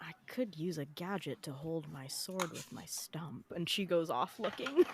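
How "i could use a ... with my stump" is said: very quiet, low muttering under the breath. Voicing a character muttering as she goes off to shop: muttering under her breath. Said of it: "under her breath going".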